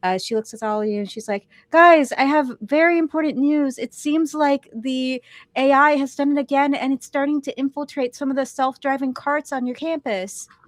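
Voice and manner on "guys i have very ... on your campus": sweet voice with raised pitch. Voicing Vita, the girl trapped in the VR system, with news: sweet Vita voice. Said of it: "she has lovely pink hair and a very sweet voice".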